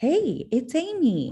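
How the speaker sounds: very high, friendly, cheery voice. Giving feedback, showing how to answer the phone: smiling phone greeting. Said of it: "your beautiful smile that you have going".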